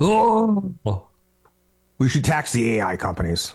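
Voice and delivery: slow sing-song, stretched oh, wide high pitch swings. Imitating a politician pitching a tax to voters: Bernie Sanders impression. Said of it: "that's my impression of Bernie Sanders".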